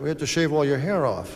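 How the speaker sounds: normal talking voice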